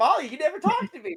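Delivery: eager, very high, loud bursting excitement. Voicing a character who gets excited when asked about his home: excited character voice. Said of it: "he gets so excited".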